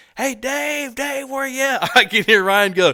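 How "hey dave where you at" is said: mock, high-pitched, shouted call-out yell. Retelling how the ghost yelled again for Dave, retelling a yell. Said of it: "he yells again".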